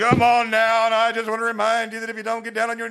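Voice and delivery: very high fire-and-brimstone pulpit preacher voice. Sharing a favorite sermon style, imitating Baptist preachers: brimstone-y Baptist preacher. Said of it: "Baptists are very sort of brimstone-y".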